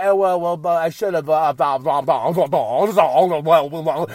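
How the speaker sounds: low, rambling voice, each "blah" dragged out. Retelling a boss who stammers while trying to talk: Tony Khan impression. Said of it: "where Tony says".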